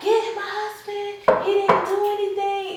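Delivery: acted very high, desperate, scared screaming. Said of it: "Screaming, like".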